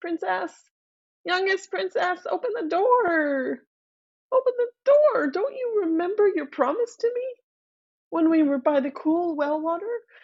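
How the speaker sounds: voice crying out high, words drawn out. Narrating a fairy tale, a voice at the door cries out to the youngest princess. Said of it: "the voice cries".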